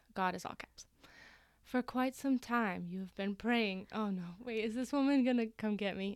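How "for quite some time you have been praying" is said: theatrical, dramatic reading. Reading a cult leader's website aloud after being asked: dramatic reading. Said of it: "let's do a dramatic reading".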